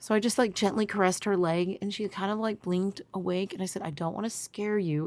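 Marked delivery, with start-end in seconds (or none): 3.8-5.1 nicest, calmest, soft and gentle soothing tone. Retelling gently waking a sleeping daughter: imitating own nicest, calmest voice. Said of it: "in my nicest, calmest voice".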